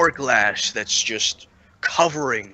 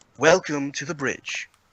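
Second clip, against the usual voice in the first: level, toneless, flat monotone machine-like voice; 3 semitones higher than usual. Describing an elevator arriving after a ding, quoting its announcement: monotone voice. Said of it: "in a monotone voice".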